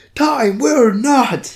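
re-enacted scream. A co-host recaps a scene, echoing a character's screamed line, retelling a scream. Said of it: "co-host echoes the screamed line dramatically".

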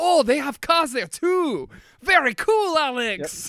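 high, slow, gushing Dutch-accented voice.

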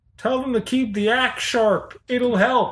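high, jeering heckling scream. Voicing someone in the crowd at a trial: screaming from the crowd. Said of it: "Someone screams".

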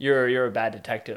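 plain

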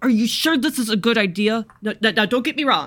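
very urgent hushed whisper. A character pulls another aside after leaving the soup shop, in a very urgent whisper. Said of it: "[name] grabs Quill by the arm and kind of pulls her off to the side and kind of like very urgently whispers".

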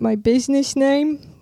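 failed Jersey accent attempt. Retelling what a man said when asked about Jersey Mike's: bad New Jersey accent. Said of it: "I was trying to do Jersey".

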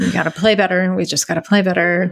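put-on flat monotone voice. Imitating Brad Stevens repeating himself while mic'd up: flat monotone imitation. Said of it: "there was no intonation in".

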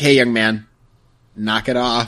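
put-on angry voice, scolding in manner. Imitating how Quark scolds Doofus when he rebels: Quark scolding like an angry mom. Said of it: "talks to him like an angry mom".

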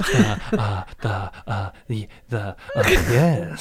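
very slow, stalling on every word. Starting an improv scene as Jeff Goldblum: Jeff Goldblum voice. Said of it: "that's my Jeff Goldblum Bloom impression".

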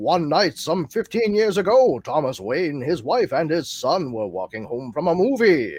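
put-on vintage, old-timey radio drama narrator voice. Reading a story's narration aloud for fun: old-timey radio drama narration. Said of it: "in like old-timey radio drama voices".

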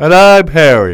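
very loud, high, stretched through a yawn. Co-host introducing himself at the start of the show, mid-yawn. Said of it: "Here I'm in mid-yawn".

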